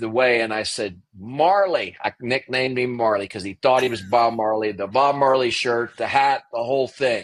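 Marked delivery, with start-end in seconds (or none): 1.2-2.0 mild calling-out voice. Retelling calling a nickname across the camp: imitating own yell. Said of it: "So I yell across the".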